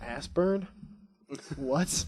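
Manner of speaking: mock baffled, confused, incredulous double-take. Recalling first hearing a word, acting out own confused reaction. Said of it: "I was like".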